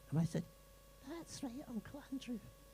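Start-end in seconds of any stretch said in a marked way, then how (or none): 1.1-2.4 put-on very high, soft childlike voice, like a six-year-old. Retelling a talk with Matthew, the speaker answers in Matthew's high-pitched voice. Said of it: "It's very sort of high-pitched, almost like a six-year-old's".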